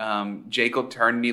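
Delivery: ordinary talk, nothing marked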